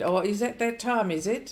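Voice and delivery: mock, shrill, very loud, sarcastic retort. Retelling what people keep saying to women: imitating a sarcastic remark. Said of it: "how many times have I heard that?".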